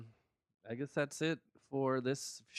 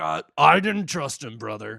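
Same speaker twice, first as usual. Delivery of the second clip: very loud, rough, slow, drawn-out growling bellow; 3 semitones higher, 14 dB louder than usual. Retelling what Hulk Hogan said about Luger: imitating Hogan. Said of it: "He's like".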